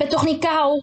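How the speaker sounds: piercing, shrill, high-pitched shriek. A woman answers the man's accusation, shrieking. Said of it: "gilde het mens".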